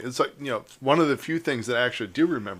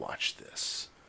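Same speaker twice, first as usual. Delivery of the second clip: deep, menacing, hellish, ominous whisper. Imitating the other speaker making a point: voice from the depths of hell. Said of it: "comes out of the depths of hell".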